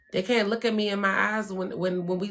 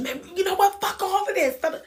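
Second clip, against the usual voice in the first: high-pitched, out-of-control, very emotional outburst; 10 semitones higher, 3 dB louder than usual. Speaker showing what happens when emotions take over: mock emotional outburst. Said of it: "we start letting our emotion".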